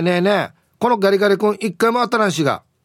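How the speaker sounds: gentle mock half-yell. Retelling what the speaker said to the register clerk, retelling a gentle yell. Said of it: "少し優しく怒鳴ったら".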